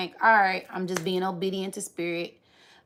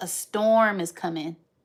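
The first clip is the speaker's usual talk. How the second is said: ordinary talk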